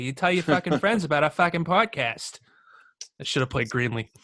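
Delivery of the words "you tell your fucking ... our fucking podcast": put-on Boston accent. Podcast host signs off to listeners, in a boston accent. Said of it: "we'll talk in a fucking Boston accent".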